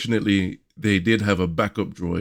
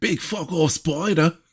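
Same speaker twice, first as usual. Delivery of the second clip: very high, exaggerated, put-on Australian accent; 9 semitones higher than usual. Recapping an episode, repeating a phrase in an australian accent. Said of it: "That's my Australian accent".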